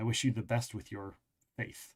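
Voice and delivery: cool, polite delivery with thin, faint disdain underneath. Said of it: "She says almost with disdain".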